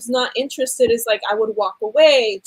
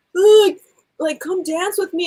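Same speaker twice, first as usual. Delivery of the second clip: mock drunk man voice, higher pitch; 6 semitones higher than usual. Retelling how a drunk man asked her to dance: imitating a drunk man. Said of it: "He comes up to me drunk".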